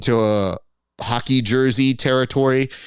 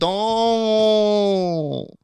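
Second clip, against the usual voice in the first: put-on high, drawn-out drunk girl's holler, final T dropped; 8 semitones higher than usual. Showing how drunk girls yell the word: imitating drunk girl yelling, no T. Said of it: "They yell".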